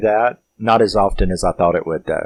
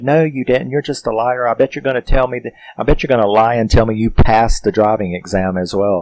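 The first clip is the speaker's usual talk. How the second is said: put-on angry scolding tone; 2 semitones higher than usual. Retelling how the parents scold the boy on the phone: imitating angry scolding. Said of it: "they are just bitching him out".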